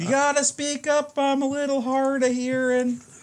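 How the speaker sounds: loud, very high-pitched shouting. A hard-of-hearing character tells someone to speak up, yelling. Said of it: "is that why you're yelling?".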